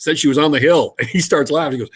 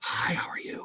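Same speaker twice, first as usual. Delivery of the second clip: very quiet, barely voiced, breathy whisper. Retelling a late-night phone call from a woman: imitating a woman whispering. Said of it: "this woman is whispering".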